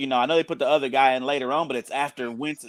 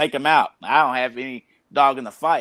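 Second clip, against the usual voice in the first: usual speaking voice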